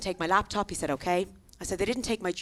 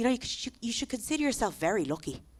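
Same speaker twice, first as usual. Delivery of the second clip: put-on angry voice, quieter; 4 dB quieter than usual. Retelling what a policeman said after a break-in: imitating an angry policeman. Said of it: "He got very angry with me".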